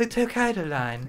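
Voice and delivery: put-on British announcer voice. Describing train announcements in Japan, imitating a female British accent announcement. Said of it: "a female British accent that repeats it".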